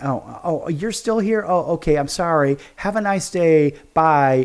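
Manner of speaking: short, curt, snide, condescending tone. Retelling how the lady at Crumbl answered him: imitating a condescending tone. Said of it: "very condescending".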